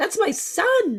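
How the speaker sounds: shocked, very high, slow, squeaky exclaim.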